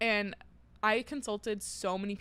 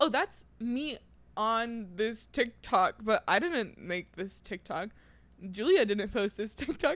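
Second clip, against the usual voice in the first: ordinary delivery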